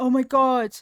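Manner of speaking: loud, panicked, freaked-out outburst. Retelling an ex's reaction to a leak on his car: imitating someone freaking out. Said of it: "going out there freaking out".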